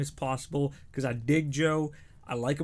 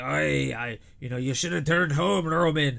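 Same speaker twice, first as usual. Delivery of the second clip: horrible put-on Scottish accent; 4 dB louder than usual. Talking up the match build, address Roman in a horrible Scottish Drew McIntyre accent. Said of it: "That's my horrible Scottish accent".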